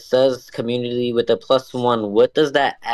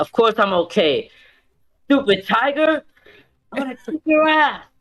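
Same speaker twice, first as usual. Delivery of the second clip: enraged shout, high and rising very high; 11 semitones higher than usual. Playing a character shouting at a tiger that bit them: angry in-character outburst. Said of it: "I am conditioned under angry".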